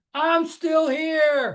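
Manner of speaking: very high, shrill mock scream. Retelling a dad's morning joke: imitating dad screaming. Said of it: "he'd scream".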